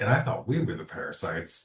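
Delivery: hushed half-whisper in character. Half-whispering a remark to Chauncey in character: half-whispering in character. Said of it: "whispers to Chauncey".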